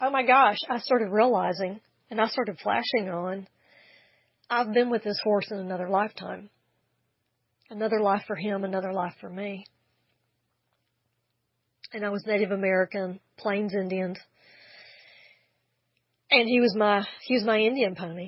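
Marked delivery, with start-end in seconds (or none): 7.7-18.3 emotional, choked-up voice catching. Recalling a past life shared with the horse, speaker is choked up. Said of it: "now I'm getting choked up again".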